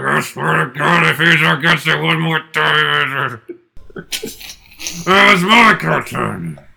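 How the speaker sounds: slow, drawn-out, creaky, rough voice simmering with fury. Acting out a scene, voicing Friz from the next room: seething Friz Freleng. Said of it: "Frizz seething from the next room going".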